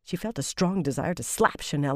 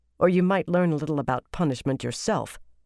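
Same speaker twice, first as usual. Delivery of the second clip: usual speaking voice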